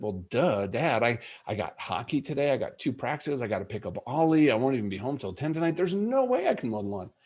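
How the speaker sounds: play-acted dripping well-duh sarcasm, swooping pitch. Retelling his son's reply about mowing the lawn: imitating a sarcastic reply. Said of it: "you're sarcastic".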